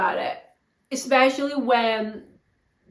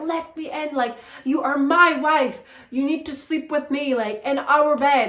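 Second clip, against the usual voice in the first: put-on angry, agitated voice; 3 semitones higher than usual. Retelling how a man demanded his wife let him in: acting out his angry demand. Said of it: "he was getting really like agitated and angry".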